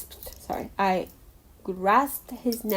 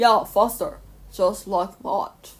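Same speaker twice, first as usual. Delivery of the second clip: fake, very American accent, slow and bad. Speaker retries the line, trying to sound very American: bad American accent. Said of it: "I'm gonna try like sounding very American".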